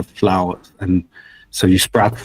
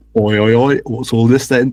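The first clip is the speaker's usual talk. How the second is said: put-on London Cockney accent; 3 semitones higher than usual. Asked about the voice they've done before, the speaker tries a Cockney accent.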